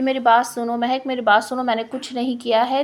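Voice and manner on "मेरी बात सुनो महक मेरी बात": ordinary delivery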